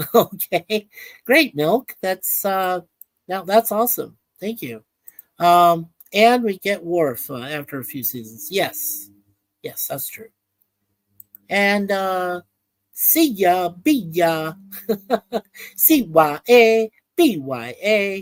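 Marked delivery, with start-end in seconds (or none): 12.9-18.2 slow, drawn-out baseball stadium announcer call. Calling out a spelled word to Milk, in a Yankees announcer impression. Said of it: "I was trying to do it like the announcer from the Yankees".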